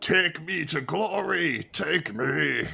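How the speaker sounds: raw, ragged, high, rough yell. A narrator voices a character in a game, letting out a yell. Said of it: "he lets out a yell and yells".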